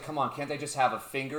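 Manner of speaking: ordinary talk, nothing marked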